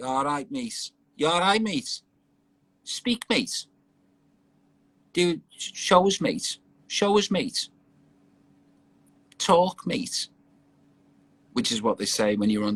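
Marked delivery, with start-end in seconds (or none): 0.0-10.3 Liverpool Scouse accent, pitched up. Asked whether they can do Scouse accents, showing a Scouse accent. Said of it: "Can you do Scouse accents?".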